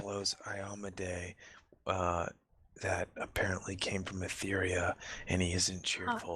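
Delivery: hushed whisper. In a role-playing game, leaning over to whisper about a halfling companion, whispering. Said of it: "and I whisper".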